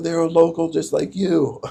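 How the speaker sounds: words said through giggles, giggly delivery. Retelling haggling over a fare, repeating own words: giggling. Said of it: "I'm, like, giggling and stuff".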